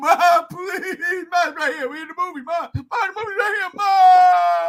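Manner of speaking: put-on sobbing child voice, high, loud, "ma" stretched. Retelling begging his mother to see Godzilla at six, mock crying child. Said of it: "crying like a little baby dog".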